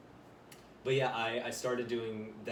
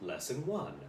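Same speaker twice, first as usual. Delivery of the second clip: higher-pitched English-accented narrator voice. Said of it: "I have to do, like, an English accent".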